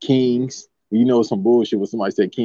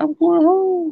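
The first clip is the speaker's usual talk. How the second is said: very high, squeaky little voice. Telling a friend how he should have sounded walking home: Karl-Anthony Towns high-pitched voice. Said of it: "a little high-pitched voice".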